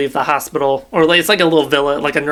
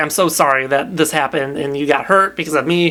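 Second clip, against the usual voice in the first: put-on tearful voice. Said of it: "just immediately starts crying".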